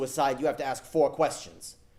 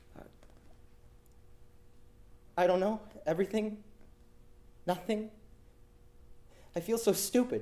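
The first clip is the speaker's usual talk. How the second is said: uneasy, uncomfortable, breathy near-whisper; 7 semitones higher, 6 dB quieter than usual. Retelling a phone call: imitating a caller sounding uncomfortable. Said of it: "She started to sound uncomfortable".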